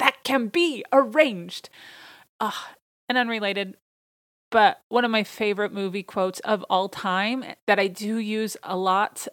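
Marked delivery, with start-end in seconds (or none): 0.0-1.7 shouted villain voice, high. Speaker recounting a movie scene, retelling a character's yell. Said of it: "he yells".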